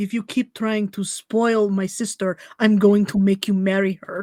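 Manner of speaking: low mumble, muttered under the breath, half to oneself. Speaking in character during the game: mumbling under her breath. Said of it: "Virginia mumbles under her breath".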